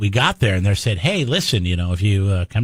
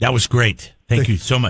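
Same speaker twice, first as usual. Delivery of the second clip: sarcastic delivery. Responding to a caller's answer on air: sarcastic tone. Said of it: "hearing the sarcasm in my voice?".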